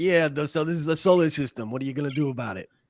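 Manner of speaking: joking, put-on New York Bronx accent. Joking about how the astronomy program would sound from the Bronx: put-on Bronx accent. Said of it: "if I was from the Bronx".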